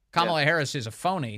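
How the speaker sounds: ordinary talk, nothing marked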